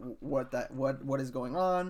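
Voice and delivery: flustered, panicked, stammering, tripping over words. Retelling getting a startling email from the school: imitating own freaking out. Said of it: "freaking out".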